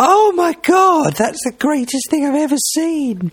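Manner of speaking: very high, slightly effeminate put-on voice. Retelling how the three of them reacted to first seeing email, in a slightly effeminate voice. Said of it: "we said it in that slightly effeminate voice".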